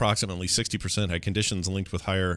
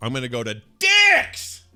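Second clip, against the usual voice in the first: loud, slow, drawn-out announcement with rising pitch; 5 semitones higher, 8 dB louder than usual. Retelling telling his wife where he'll go: imitating own loud announcement. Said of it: "I'd say it like that. Loud".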